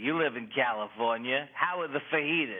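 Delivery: put-on Queens accent. Describing an early act built on imitating their mother, Queens mother accent impression. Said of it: "that's basically how people in Queens sound".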